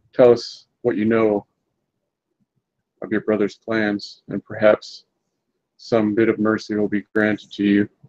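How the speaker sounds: voiced, close-up, leaning-in delivery. A character leans in close behind a man, lowered, quiet voice. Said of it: "my voice lowered, not a whisper, but quiet".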